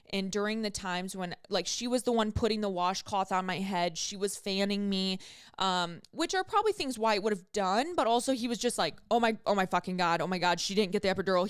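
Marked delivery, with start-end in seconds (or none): 9.1-11.4 imitated scared, panicked voice. Retelling a partner's words during labor: imitating a scared partner. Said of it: "He was so scared for me".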